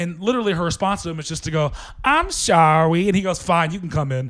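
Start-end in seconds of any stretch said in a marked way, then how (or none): 2.0-3.1 put-on baby-talk voice. Retelling how a woman answered an angry man, imitating her baby talk. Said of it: "almost like baby talk".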